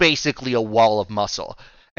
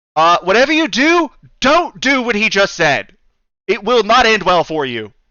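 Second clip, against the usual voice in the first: loud shout, voice raised; 7 semitones higher, 6 dB louder than usual. Voicing a character calling out from across the pit: Melina shouting. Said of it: "Melina from across the way shouts at you".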